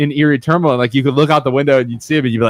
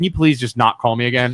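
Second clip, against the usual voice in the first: mock-nice, acted polite tone, lower pitch; 3 semitones lower, 4 dB quieter than usual. Recounting a phone call, retelling a polite request. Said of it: "it's like I'm nice to him".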